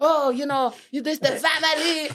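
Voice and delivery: put-on Haitian-accented speech. Retelling a phone call from a father: imitating dad's Haitian accent. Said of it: "with his Haitian accent".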